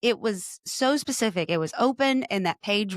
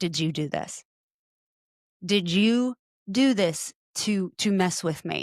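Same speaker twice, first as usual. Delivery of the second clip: mock tearful, slow, sobbing, crying delivery. Retelling calling her husband from the closet to accuse him, imitating her own crying. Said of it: "I called him from the closet crying".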